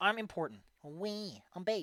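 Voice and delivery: squeaky haughty little voice. Storyteller voicing one of four squeaky voices inside a building, squeaky haughty little voice. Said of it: "Inside this building are 4 squeaky voices".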